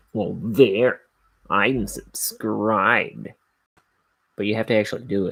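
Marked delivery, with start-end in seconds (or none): 0.1-3.2 dry sarcasm, slow, stretched out long. Showing how to subscribe insincerely: sarcastic. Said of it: "just kinda do it kinda sarcastically".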